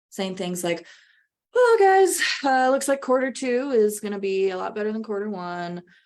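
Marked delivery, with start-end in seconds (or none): 2.7-5.8 nonchalant, offhand, low-energy delivery. Demonstrating a conversation that sounds like you don't care: nonchalant, low energy. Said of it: "I'm moving my pitch around, but it's in a very nonchalant way".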